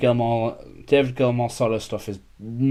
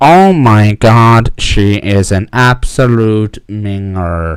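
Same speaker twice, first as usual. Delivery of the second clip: very loud, very slow, machine-like narrator voice; 2 semitones lower, 11 dB louder than usual. Retelling a text message read aloud: Stephen Hawking voice. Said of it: "the Stephen Hawking voice, and it literally goes like this".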